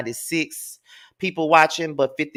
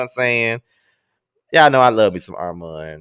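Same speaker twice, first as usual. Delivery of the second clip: ordinary delivery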